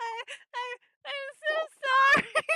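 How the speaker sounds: loud, high speech through laughter, stumbling. Apologizing to a listener for hurting their ears: laughing while talking. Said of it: "I'm not crying, laughing".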